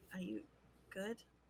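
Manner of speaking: hushed, very quiet murmur. Voicing a character leaning in to check on a crying friend: very quiet. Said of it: "very quietly just say".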